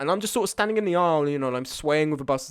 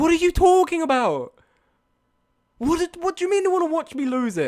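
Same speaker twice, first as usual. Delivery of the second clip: very high, loud, worked-up, losing-it outburst; 13 semitones higher, 5 dB louder than usual. Speaker reacting to someone wanting to watch them lose it, losing it. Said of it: "I'm losing it about losing it".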